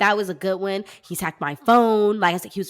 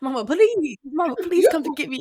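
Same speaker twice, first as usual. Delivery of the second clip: dog voice, pitched up; 8 semitones higher than usual. Imagining the dog calling mama to be picked up: voicing the dog. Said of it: "She probably wanna call my mama".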